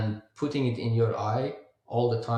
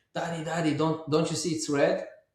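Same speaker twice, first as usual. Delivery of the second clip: mock child scream, much higher pitched; 5 semitones higher than usual. Father retelling his seven-year-old at a red light, imitating a child screaming. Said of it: "he starts screaming".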